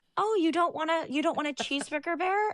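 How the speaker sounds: high, cooing adult voice.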